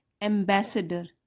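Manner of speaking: ambassador with the second syllable bas stressed. Explaining pronunciation in an English sentence: stress on bas in ambassador. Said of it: "बी में stress है यहाँ पे".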